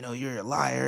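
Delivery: imitated, mock angry yelling. Retelling a man yelling at a lady who was in tears: retelling a man yelling. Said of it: "he was just yelling at this lady".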